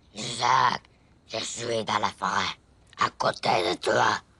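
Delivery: big, very deep, very low monster voice. Telling about a dream where a voice called their name; deep monster voice. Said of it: "une grosse voix de monstre".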